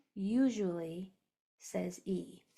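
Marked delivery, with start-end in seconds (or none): 0.2-1.1 stress on the word usually. Repeating a spelling rule for a class: stress on usually. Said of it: "it's a usually rule".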